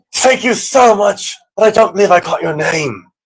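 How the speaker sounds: high, projected calling-out voice. In character, calling after a man who is leaving, shouting after someone. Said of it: "I'm going to shout after him".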